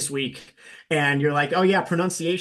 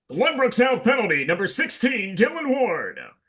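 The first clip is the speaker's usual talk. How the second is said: high, projected arena announcer voice; 7 semitones higher than usual. Showing how they sound on the broadcast, the speaker announces a penalty in a projecting announcer voice. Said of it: "a little bit of a different voice".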